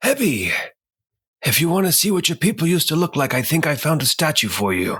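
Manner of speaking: projected, theatrical stage whisper. Pine whispers back into the hall, calling to hebby, in a stage whisper. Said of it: "kind of a stage whisper".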